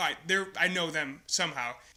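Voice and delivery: ordinary talk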